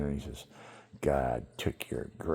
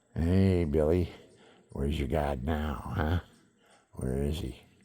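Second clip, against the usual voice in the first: demonic voice. Retelling hearing a voice while lying hurt: imitating a demon's voice. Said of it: "the demon".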